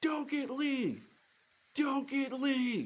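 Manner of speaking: put-on, very high, repeated scream. Retelling a phone call, begging a friend: imitating own screaming. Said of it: "just screaming into the phone".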